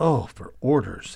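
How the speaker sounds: a groan to oneself, meant for no one else. A soldier awaiting orders as the enemy column nears groans to himself. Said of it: "he groaned to himself".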